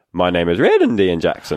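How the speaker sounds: voice cracking between registers, wide swooping breaks. Recalling when his voice was breaking, voice cracking up high. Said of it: "every now and again, you would go really high. So you'd say something like".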